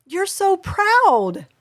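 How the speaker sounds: excited, high-pitched, energetic tone. Demonstrating how to reflect an excited child's feeling, with raised pitch. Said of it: "elevate the pitch of our voice".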